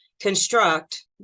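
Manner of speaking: construct with stress on second syllable -struct. Explaining two ways to say construct: stress on second syllable of construct. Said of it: "with the emphasis on the second syllable".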